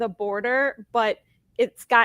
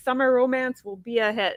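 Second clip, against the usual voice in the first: ordinary talk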